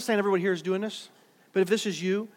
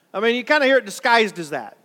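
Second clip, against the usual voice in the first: plain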